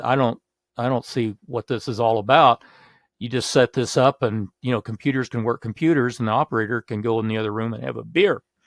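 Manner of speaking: plain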